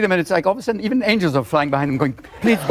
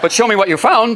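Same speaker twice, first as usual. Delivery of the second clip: ordinary delivery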